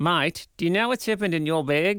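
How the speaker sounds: put-on New Zealand accent. Speaker corrects an Australian accent attempt, put-on New Zealand accent. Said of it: "That should have been New Zealand".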